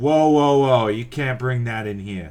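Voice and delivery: loud, put-on Brooklyn accent. Narrator voices a dwarf who gets up at the entrance, Brooklyn accent. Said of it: "He's from Brooklyn, apparently".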